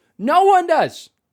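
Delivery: full-throated shout, very high and very loud. Speaking to listeners, getting spicy because they care so much, yelling. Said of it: "Sorry to yell".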